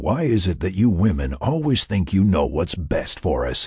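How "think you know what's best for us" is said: plain reading voice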